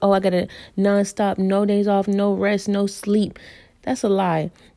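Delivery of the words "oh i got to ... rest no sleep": ordinary talk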